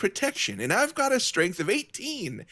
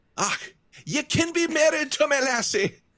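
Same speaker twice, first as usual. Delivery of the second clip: high, slow attempted Scottish accent; 7 semitones higher than usual. Voicing a dwarf character: attempted scottish accent. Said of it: "I wish I could do Scottish".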